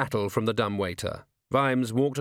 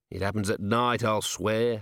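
ordinary delivery

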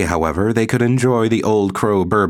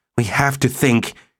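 gasping, higher pitch and slower; 5 semitones higher than usual. Glenn Belsner stops, realizing they are simply running in fear: gasping. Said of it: "he gasped".

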